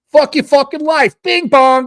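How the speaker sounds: put-on New York accent, loud and high. Showing how a New Yorker sounds: New York accent. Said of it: "New Yorker or whatever".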